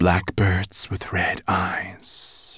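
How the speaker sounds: slow, hissing sea serpent voice. Reading a story, the sea serpent answers Sorrel, in a hissing sea serpent voice. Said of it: "she hissed".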